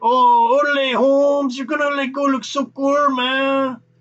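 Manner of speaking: put-on high, slow, stretched-out caricatured Mexican accent. Describing what a ride is missing: Cheech Marin impression. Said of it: "you don't get Cheech Marin going like".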